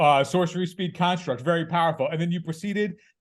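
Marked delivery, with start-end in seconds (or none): 0.0-2.1 sarcastic, ironic, faux-impressed tone. Retelling own remark to an opponent during a game: imitating own sarcastic remark. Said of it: "I sarcastically went".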